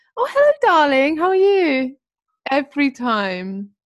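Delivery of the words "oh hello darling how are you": very high, loud, posh fatherly voice. Acting out how the speaker's dad answers the phone, in Jonathan Gordon's posh voice. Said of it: "he sounds posh".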